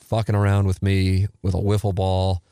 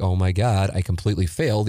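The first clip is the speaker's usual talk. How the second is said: plain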